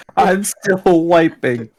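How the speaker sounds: mock very high-pitched, shrill shout. Retelling what he shouted from the bathroom, the speaker imitates someone shouting. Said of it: "he just shouts".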